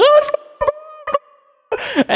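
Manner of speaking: put-on very high, slow, giddy little kid voice.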